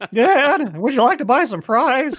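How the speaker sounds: mock voice-breaking teen voice. Mocking a show's character while discussing last season, in Ryan's pubescent voice. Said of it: "fucking like fucking pubescent voice".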